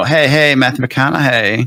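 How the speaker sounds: put-on creepy and goofy voice. Retelling a running joke on the show: creepy Matthew McConaughey voice. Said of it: "my creepy Matthew McConaughey voice".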